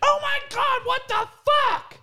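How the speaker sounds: piercing, very high-pitched, loud shriek. Retelling hearing a girl's voice at three AM: imitating a girl screaming. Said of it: "this girl's voice, like, scream".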